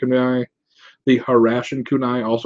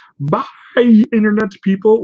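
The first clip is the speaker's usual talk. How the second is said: voice breaking into a high, loud crack; 9 semitones higher, 5 dB louder than usual. Signing off a video to viewers: voice cracking. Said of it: "Why did my voice crack?".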